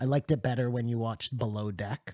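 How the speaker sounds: ordinary delivery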